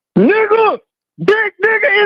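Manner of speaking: shrill, high-pitched, excited all-out scream. A caller comes on the line and screams at the host, screaming. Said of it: "can you stop screaming".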